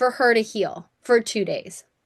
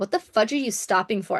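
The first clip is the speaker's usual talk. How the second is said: usual speaking voice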